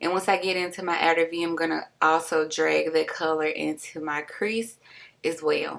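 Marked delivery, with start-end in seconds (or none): 0.0-1.4 fast, rushed, rattled-off talk. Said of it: "I feel like I'm talking really fast".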